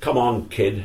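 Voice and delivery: put-on Forest regional accent. Retelling how Bumps came up and led him off, imitating Bumps's Forest accent. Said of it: "in his typical Forest accent".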